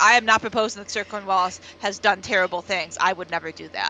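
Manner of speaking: normal talking voice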